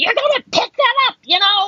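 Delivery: shrill, very high, screeched scolding scream. Retelling what an old lady across the street yelled: imitating an old lady screaming. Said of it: "screams at me".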